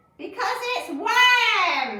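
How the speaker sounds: very high, very loud gleeful cry, worms drawn out. Reading a story aloud, a character revealing a trick: crying out gleefully. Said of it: "cried Missus Twit".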